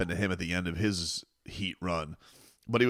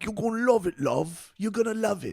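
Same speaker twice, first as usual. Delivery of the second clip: put-on lovely British accent, pitched well up; 13 semitones higher than usual. Retelling what a stylist told him, in a lovely british accent. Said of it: "tricked him with their lovely British accent".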